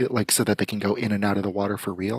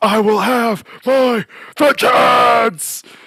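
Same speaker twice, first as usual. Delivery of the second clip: very loud, very high, shrill full-throated scream; 11 dB louder than usual. Describing a clip the brother sent the family: retelling a top-of-lungs scream. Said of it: "screaming at the top of his lungs".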